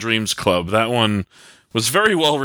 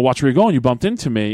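light, joking, playful teasing tone. Retelling what the kid said after bumping into someone: imitating a playful tone. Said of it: "in a playful way".

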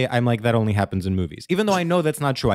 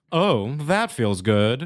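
very slow, lingering, every word drawn out. Showing how flirting back might sound: Samantha Jones voice. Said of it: "that was Samantha Jones".

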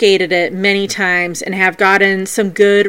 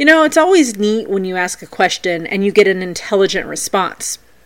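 usual speaking voice

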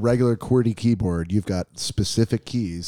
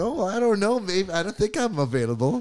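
giddy, pitched-up woman voice; 9 semitones higher than usual. Imitating a friend acting like a woman asked out to dinner: imitating Todd as a woman asked out. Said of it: "like a woman who just got asked out to dinner".

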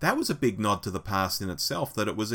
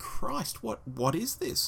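very high, incredulous gasp. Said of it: "It was like".

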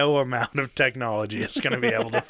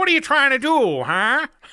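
put-on very high, loud 1930s old-movie delivery; 14 semitones higher, 7 dB louder than usual. Redoing a scene line after being told to say it 1930s-style: 1930s old-movie voice. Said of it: "say it like you're uh, in the nineteen thirties".

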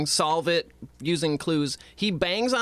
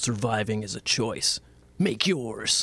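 deep car-ad commercial announcer voice; 5 semitones lower than usual. Mocking a line from a script that sounds like an ad, commercial-style voice. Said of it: "he sounds like a fucking commercial".

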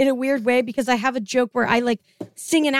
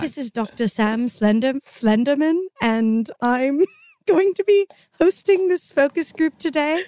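put-on British accent with a presenter-like tone. Wearing a wig and hosting a focus group, put-on british accent. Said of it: "I wore a wig and I did a British accent".

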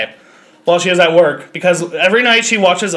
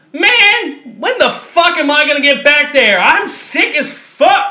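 acted drawn-out, slow, high-pitched yell, long on "man"; 8 semitones higher than usual. Quoting a waiting patient in an urgent care lobby, retelling a woman's yell. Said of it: "she starts yelling".

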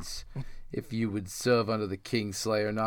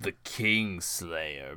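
voice full of scorn, disdain and contempt; 3 semitones lower than usual. Reading aloud a knight naming his replacement: voice full of contempt. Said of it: "with his voice full of contempt".

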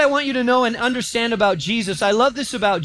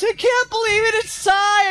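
mock very high, shrill, hysterical screeching fan scream; 11 semitones higher than usual. Recounting screaming fans, imitating a hysterical fan. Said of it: "one of them was really hysterical".

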